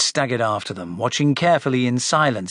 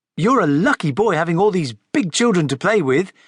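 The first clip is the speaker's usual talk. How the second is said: bright, extra cheerful, pitched-up voice; 5 semitones higher than usual. Narrator reads a woman's line to the boy Frederick, in an extra cheery voice. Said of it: "she said in an extra cheery voice".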